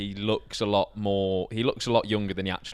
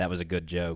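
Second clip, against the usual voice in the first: muttered under breath, quieter; 3 semitones lower, 5 dB quieter than usual. Retelling a comedian's aside after a failed joke: imitating muttering under breath. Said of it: "under his breath".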